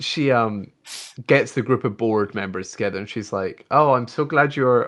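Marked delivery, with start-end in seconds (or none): 3.7-4.9 put-on German accent slipping in. Acting out a woman greeting her gathered board members, in a Gal Gadot accent impression. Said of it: "why I keep going into it".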